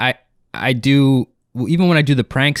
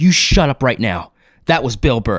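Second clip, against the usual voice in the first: mock-angry, confrontational put-on anger. Recounting a comedian who got in his face, retelling an angry outburst. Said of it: "He got so mad, like uh, he got up in my face".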